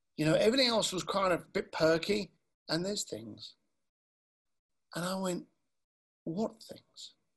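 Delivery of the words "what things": hushed, breathy, near-whisper late-night radio DJ voice. Retelling the question you asked him back in a conversation, very quiet. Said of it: "Real quiet".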